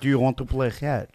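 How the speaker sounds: put-on Israeli-accented speech. Retelling how a dad asked his kid to play catch, in an Israeli accent. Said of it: "There it is".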